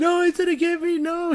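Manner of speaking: high, loud scream full of terror.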